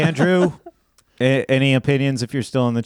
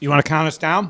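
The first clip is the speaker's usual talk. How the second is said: spoken through a mouthful, mid-chew; 4 semitones higher than usual. Asking another speaker to start the countdown, talking while chewing. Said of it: "I'm still chewing".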